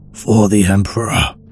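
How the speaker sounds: rough, rasped-out rasping voice. A soldier facing a traitor speaks through his respirator, rasping whisper. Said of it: "he rasped in barely a whisper through the static of his respirator".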